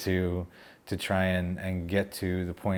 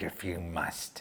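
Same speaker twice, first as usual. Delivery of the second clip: mock whisper, strong, pushing and breathy; 8 dB quieter than usual. Retelling a voice that came through again: imitating a strong voice. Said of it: "like, very, like, strong".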